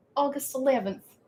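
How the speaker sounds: slipping into a southern accent. Announcing a Halloween party start date, with a sudden southern accent. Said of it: "I got a southern accent there all of a sudden".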